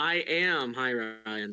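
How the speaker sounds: defeated, deflated, beaten and let-down tone. Contestant answering the host after a tough matchup, sounding defeated. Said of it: "you sound a bit defeated right now".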